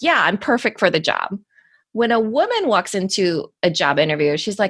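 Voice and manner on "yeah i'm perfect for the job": ordinary delivery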